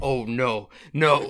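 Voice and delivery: put-on yelling. Retelling watching a creepy scene in a dark room: imitating own past yelling at tv. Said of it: "yelling at the T V".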